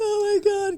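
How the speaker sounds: very high, loud, play-acted tearful cry. Retelling meeting a guest on Zoom, imitating own crying.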